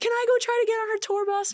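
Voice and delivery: put-on crying, high and tearful. Recalling a concert night, speaker retells asking parents something, imitating crying to parents. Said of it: "I'm like crying to my parents".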